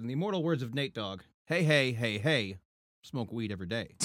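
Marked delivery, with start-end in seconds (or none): none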